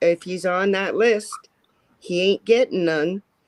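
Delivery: normal talking voice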